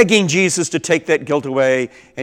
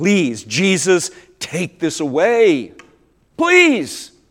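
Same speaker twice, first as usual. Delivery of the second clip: slow, swooping, pleading voice; 4 semitones higher than usual. Retelling how a man begged god for relief: acting out begging. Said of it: "he begged God".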